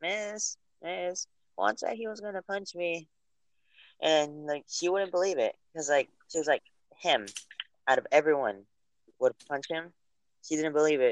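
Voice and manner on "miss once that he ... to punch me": put-on high, hushed, childish kid voice. Retelling how another kid told the teacher on him, impersonating a kid telling the teacher. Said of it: "let me try to do an impersonation".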